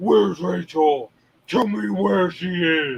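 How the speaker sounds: slow, masked vigilante character voice. Explaining what Nemesis Prime's voice sounds like: Dark Knight Batman voice. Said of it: "He's trying to do the Dark Knight Batman".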